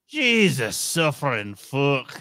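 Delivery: fake Glaswegian accent. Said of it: "in his best accent".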